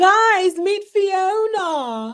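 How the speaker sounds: very high, drawn-out fake British accent. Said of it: "a fake British accent".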